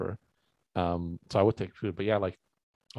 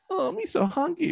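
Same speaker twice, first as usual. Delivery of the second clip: silly hungry put-on voice, much higher, slower; 4 dB louder than usual. Doing a character bit while chatting, in a silly hungry character voice. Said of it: "what is this character you're doing?".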